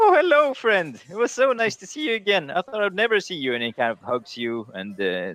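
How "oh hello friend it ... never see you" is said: very high, swooping, delighted, overjoyed voice. Narrator voicing a hooded figure approaching the player's character, a very happy greeting. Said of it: "he approaches Sigmar very happily".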